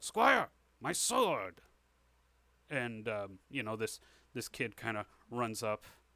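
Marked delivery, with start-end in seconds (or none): 0.0-1.6 slow, high, loud calling out. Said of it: "the king calls out".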